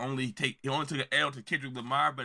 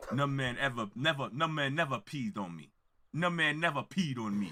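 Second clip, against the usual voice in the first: put-on Jamaican accent. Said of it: "trying to have his uh freaking Jamaican accent".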